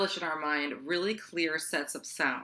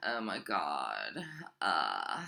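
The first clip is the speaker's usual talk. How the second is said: low, gravelly, creaky vocal fry, god drawn out; 12 semitones lower, 5 dB quieter than usual. Explaining a trendy way of talking, demonstrating it in vocal fry. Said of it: "So vocal fry is like".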